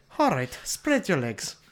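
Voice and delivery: put-on old-fashioned Irish cop accent. Voicing a forties cop character: Irish cop accent. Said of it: "He doesn't have that kind of Irish".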